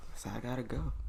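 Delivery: speaking in a whisper. Answering the others in a podcast conversation: whispering. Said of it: "Why are you whispering?".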